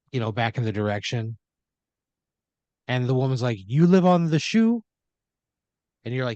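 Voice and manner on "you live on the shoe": put-on heavy Russian accent laid on thick, high, slow. Retelling a woman's question to the speaker and friends, thick Russian accent. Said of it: "She has a thick Russian accent".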